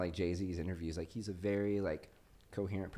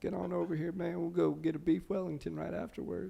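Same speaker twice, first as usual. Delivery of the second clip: very high, rough, creaky put-on voice; 10 semitones higher than usual. Doing an impersonation on a podcast: Bill Clinton impression. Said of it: "It's my Bill".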